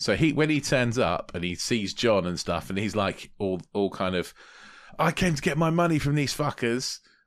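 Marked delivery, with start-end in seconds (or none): 5.0-7.0 put-on angry, pitched-up British bloke's accent. Retelling a scene where a character turns up angry: imitating an angry British bloke. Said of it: "Good impression".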